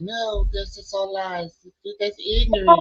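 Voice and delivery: high-pitched, slow, sing-song delivery. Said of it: "listening to a video of [name]".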